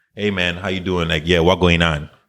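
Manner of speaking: speaking Caribbean patois. Speaker demonstrates how they would talk with college friends, in caribbean patois. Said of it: "I would be talking like this".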